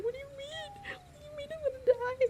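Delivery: very high, frightened, confused and bewildered voice. Retelling a car ride as a child, the speaker acts out their younger self retelling being scared. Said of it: "I was like so scared".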